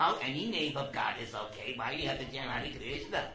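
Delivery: low-pitched, smart-aleck tone. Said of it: "She says in her smart aleck voice".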